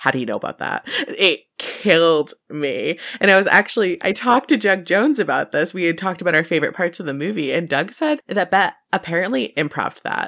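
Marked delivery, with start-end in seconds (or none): 0.0-0.9 hushed, furtive, secretive whisper. Retelling a movie scene, a character's line said off the side of the mouth: imitating a whisper. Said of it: "and whispers".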